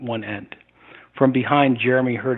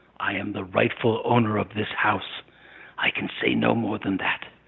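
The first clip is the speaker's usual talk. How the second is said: rasping, harsh, grating monster voice; 2 semitones lower, 5 dB quieter than usual. Narrator reads the creature's reply to a questioner, grating creature voice. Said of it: "its voice grating".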